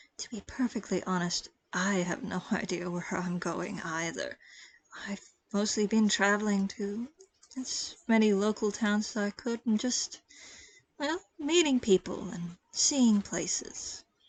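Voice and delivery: secretive, confiding delivery. Voicing a character who leans forward to share something: speaking very quietly. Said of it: "then says very quietly".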